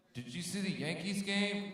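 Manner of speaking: put-on very high-pitched, loud northern accent. Doing an impression of people from up north: impression of people from up north. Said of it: "my impression of people from up north".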